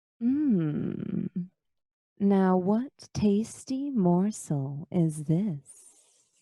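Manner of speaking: silky, smooth, slippery, slithering creepy voice. Game narrator voicing an unseen speaker calling out to a player's character: slippery, smooth voice. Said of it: "a slippery, smooth voice call out".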